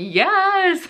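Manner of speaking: high, laughing, squealed cheer of joy. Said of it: "I was like".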